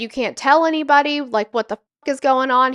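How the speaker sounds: absolutely furious, blown-up outburst. Retelling what an officer said about a reported call: imitating someone furious. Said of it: "He was absolutely furious".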